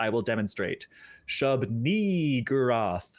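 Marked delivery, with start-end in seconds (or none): 1.3-3.1 ni stressed hard with long drawn-out ee sound. Demonstrating how to pronounce shub-ni-gurath: stressed drawn-out second syllable ni. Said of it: "you really got to hit and extend that second syllable, and it needs to have an E sound".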